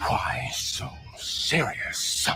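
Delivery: put-on menacing villain voice. Taunting another speaker, then delivering a line in a Joker voice. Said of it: "Why do you sound like a Joker from like Batman?".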